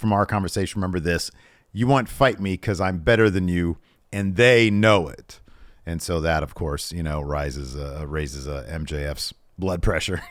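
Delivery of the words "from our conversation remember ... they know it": ordinary delivery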